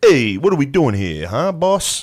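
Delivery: easygoing mobster voice. Retelling a movie scene, doing a Tony Soprano voice. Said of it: "Gandolfini's just Tony Soprano".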